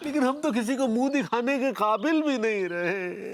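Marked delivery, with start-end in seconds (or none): none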